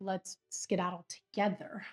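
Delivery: normal talking voice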